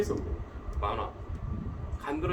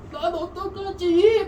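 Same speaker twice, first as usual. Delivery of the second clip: put-on whiny cartoon boy voice, much higher pitched; 8 dB louder than usual. Retelling to a friend how a certain character keeps crying, doing his whiny, high-pitched voice. Imitating a whiny cartoon boy. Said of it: "간드러지는 막 목소리 너무 하이톤 거 / 계속 징징대 / 이거 지금 진구 목소리지".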